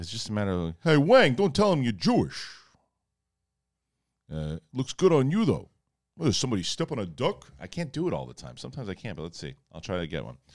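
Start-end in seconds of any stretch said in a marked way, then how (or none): 0.8-7.5 put-on comic voice, high, swooping and animated. Answering a request to speak as Rodney Dangerfield: Rodney Dangerfield voice. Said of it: "can you address some questions in the voice of Rodney Dangerfield?".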